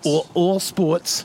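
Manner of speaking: slow mock New Jersey accent. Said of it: "You hear her accent?".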